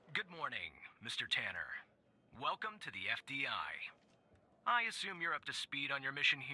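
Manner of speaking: robotic, machine-like voice. Reading a scripted mission greeting, the speaker delivers it in a robotic voice. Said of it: "sound like a robot".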